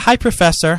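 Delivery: ordinary delivery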